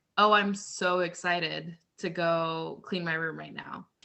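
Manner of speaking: sarcastic, insincere, over-sold fake excitement. Showing how tone changes meaning of words: sarcastic fake excitement. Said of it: "I don't sound super excited".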